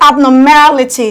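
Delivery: abnormality with strongest stress on ma. Counting syllables from the back of abnormality: stress on ma in abnormality. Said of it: "Stressing your ma louder than the other syllables".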